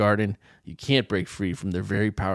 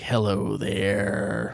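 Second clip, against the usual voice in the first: put-on movie devil voice. Narrating a scene to a listener, the speaker voices a man in a room: devil voice. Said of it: "That's my devil voice".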